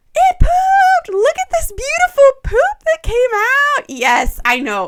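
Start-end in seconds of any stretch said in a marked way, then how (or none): 0.1-3.8 play-acted very high, loud, thrilled voice. Describing her reaction to a first poop, in a put-on excited mom voice. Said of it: "my mom voice comes out on these colics".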